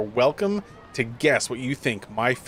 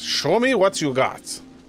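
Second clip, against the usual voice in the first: put-on thick Russian accent, pitched-up shouted yell; 7 semitones higher, 4 dB louder than usual. A giant Bogatir head yells at an approaching player, in a thick Russian accent. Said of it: "in a thick Russian accent".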